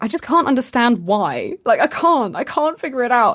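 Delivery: high, loud, sudden rushed blurted outburst. Retelling a talk with Ben, the speaker replays blurting out to him. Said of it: "I just ended up blurting out".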